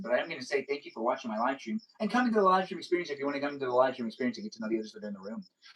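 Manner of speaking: very fast, rapid-fire, run-on rattled-off talk. A streamer thanking viewers for watching the live stream, talking really fast. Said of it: "It is fun for me to talk really fast".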